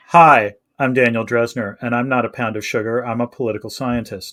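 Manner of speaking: put-on low, flat, sulky, petulant deadpan. Retrying the line as requested: flat petulant delivery. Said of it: "you want me to do the impersonation?".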